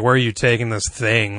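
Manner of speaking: mock, disdainful, scornful officer voice. Retelling a film scene where an officer questions a pretend prisoner; mock-disdainful officer voice. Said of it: "Like he's so disdainful".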